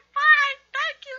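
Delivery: shrill, very high, very loud squealing character voice. Answering a greeting during a Minecraft game; high-pitched Mr. Steam voice. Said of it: "your voice is really high-pitched today".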